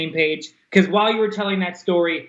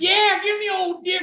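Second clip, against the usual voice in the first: mock very high, shrill, drawn-out scream; 13 semitones higher than usual. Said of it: "I would literally just start screaming".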